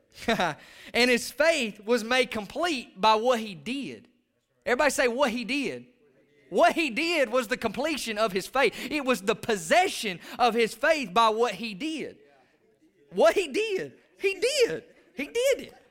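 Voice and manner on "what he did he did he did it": very high, swooping sing-song repetition. Speaker repeating a phrase to a group, high-pitched voice. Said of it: "my voice getting that high pitched".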